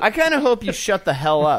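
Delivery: loud, high-pitched yelling outburst. Snapping back at another speaker who hopes it won't work: yelling. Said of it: "I'm sorry for yelling".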